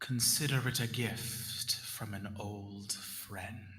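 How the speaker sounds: low whisper spoken close to the ear. Game master voicing a voice the player hears in their ear, whispering. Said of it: "you hear a whisper in your ear".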